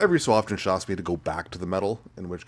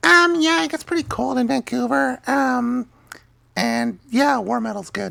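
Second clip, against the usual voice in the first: very high, slow, creaky put-on voice; 8 dB louder than usual. Answering a listener's question on behalf of Hope: Hope impression. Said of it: "I'll do my best Hope impression".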